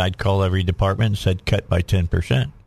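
ordinary talk

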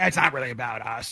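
very low, croaky frog voice. Imagining Mahomes answering about the other quarterback, Mahomes frog voice. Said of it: "frog voice and going".

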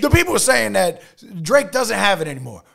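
loud, high-pitched sports commentator voice. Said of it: "Do the [name] voice".

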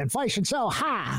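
put-on borrowed Southern accent. Quoting a questioner from a live interview: imitating a Southern accent. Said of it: "that Southern accent".

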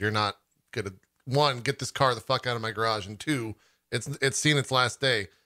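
plain

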